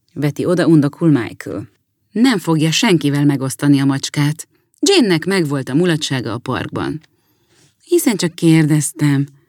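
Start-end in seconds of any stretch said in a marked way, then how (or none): 7.9-9.3 kindly, gently and mildly spoken. A sister answers her brother, gently. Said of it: "mondja szelíden Jane".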